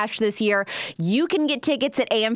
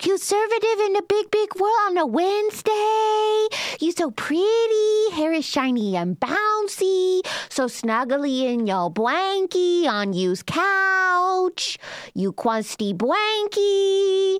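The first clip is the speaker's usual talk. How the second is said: put-on slow baby-talk voice, "couch" drawn out; 10 semitones higher than usual. Imitating a viral TikTok girl who talks to her chihuahua: baby talk to a dog. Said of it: "that is like a voice that's stuck in my head".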